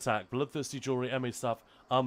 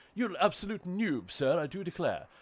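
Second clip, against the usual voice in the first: exaggerated, high-pitched, thickly laid-on English accent; 5 semitones higher than usual. Joking after accidentally saying a word oddly: very English accent. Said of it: "very, very English for a moment there".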